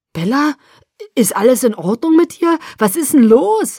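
frightened, fearful voice. A man hammers on a door and calls to the person inside, fearfully. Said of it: "rief er angsterfüllt".

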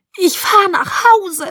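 shrill, very high scream with voice cracking. The narrator screams back through the door at a pounding man, voice breaking. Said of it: "schrie ich".

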